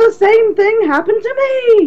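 very high, acted, stunned and shocked outburst. Retell his reply about a terrifying flight with a gremlin on the wing, imitating a shocked John Lithgow. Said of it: "his eyes are huge and he's shocked".

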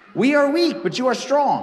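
ironic, sarcastic reading with swooping pitch.

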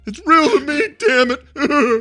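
very high, labored, breathless, drawn-out heavy breathing. Quoting a line as he says it: imitating breathing hard. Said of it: "he breathes hard. He goes".

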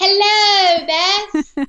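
fake British accent. Greeting the host over tea in a put-on British accent. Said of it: "Here we go with the British accents".

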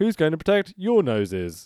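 high, weird, exaggerated ring-announcer rhythm. Retelling the ring announcer's line, imitating the announcer's weird cadence. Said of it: "he says it with that cadence".

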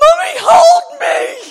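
put-on very high, loud, shrieking childlike panicked shout. A mum retelling her child panicking over the lost dog, imitating Olivia panicking. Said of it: "she's going to panic".

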